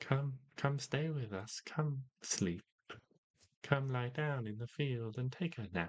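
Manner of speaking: high chorus of many tiny coaxing voices. Narrating what the plants say to a player who speaks with them, chorus of little voices. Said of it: "you hear this like chorus of little voices".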